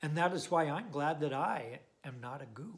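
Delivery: ordinary delivery, nothing marked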